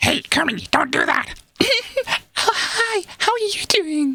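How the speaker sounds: very high, slow character voice. Describing a voice like Miss Piggy, addressing Kermit: Miss Piggy voice. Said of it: "almost kind of like, like a Miss, Miss Piggy kind of thing".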